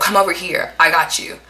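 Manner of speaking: put-on almost angry tone. Retelling a dream, telling a child to come over: retelling speaking almost angrily. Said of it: "I told the child almost angrily".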